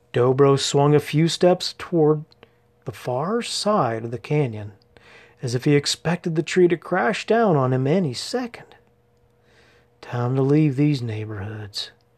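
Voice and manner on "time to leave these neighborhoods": muttering, mumbled. Dobro, stepping away from a tree he fears will fall, muttered. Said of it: "he muttered".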